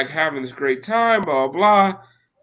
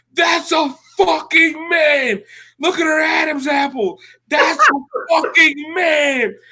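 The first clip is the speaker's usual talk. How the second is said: screaming, very high-pitched; 13 semitones higher than usual. Retelling standing on a booth seat and screaming: retelling a scream. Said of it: "I start screaming".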